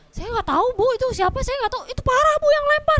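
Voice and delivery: acted flustered panic, voice climbing high and loud. Retelling what they told an older woman at the door, acting out their own panic. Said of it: "aku dengan paniknya".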